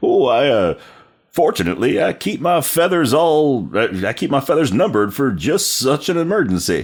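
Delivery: slow, high, swooping cartoon rooster voice. Retelling someone's answer about the exploded rooster, in a Foghorn Leghorn impression. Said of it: "he does his best Foghorn Leghorn impression".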